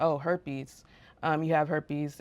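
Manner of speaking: usual speaking voice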